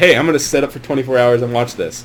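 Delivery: ordinary delivery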